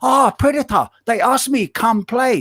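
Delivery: high-pitched voice speaking in broken English. Doing an impression of Naoki Oi's interviews: Naoki Oi impression. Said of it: "my impression of Naoki Oi".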